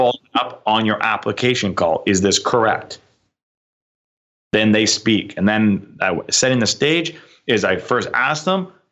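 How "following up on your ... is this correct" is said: stern, firm, serious voice. Showing how a sales call opens: stern tone. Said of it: "very, very stern tonality".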